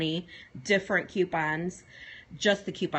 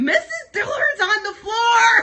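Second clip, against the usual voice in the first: shrieking, very high-pitched, very loud scream; 12 dB louder than usual. Retelling falling over next to a student: retelling a loud scream. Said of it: "And I screamed real loud".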